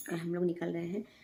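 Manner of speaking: quiet, hushed speech.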